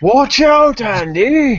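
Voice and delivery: very high, loud yell, stretched out. Playing a character in a tabletop battle, warning a companion; yelling over shoulder. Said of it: "as I'm yelling over my shoulder".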